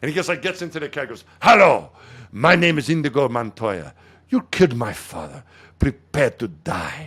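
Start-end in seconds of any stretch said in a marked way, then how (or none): 1.4-7.1 slow delivery, weighting every word. Retelling an actor performing his famous line: Inigo Montoya voice. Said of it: "You did that well".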